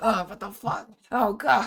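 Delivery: unholy, high, choking outburst of revulsion. Retelling her reaction to an unholy abomination, imitating an unholy choking sound. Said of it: "an unholy choking sound".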